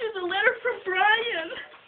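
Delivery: choked-up crying, voice breaking high and tearful.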